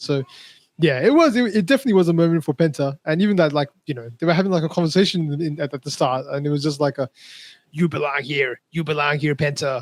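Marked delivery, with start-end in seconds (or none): 7.7-9.8 raspy, rasping wrestler voice. Imitating a wrestler talking to Penta at the start: Rey Mysterio voice. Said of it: "That was a good impression".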